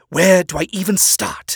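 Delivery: slow, growled, barely restrained delivery. Narrator reads an accusing man's line to the narrator, who has messed up, growling. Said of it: "He growls".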